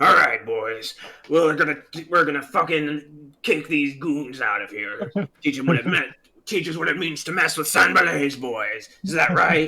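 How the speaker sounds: rough, gruff goblin-boss rallying shout. Game master voicing an enemy leader calling out to his boys, gruff hobgoblin-like voice. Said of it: "you hear like this gruff voice, somewhat reminiscent of the hobgoblin".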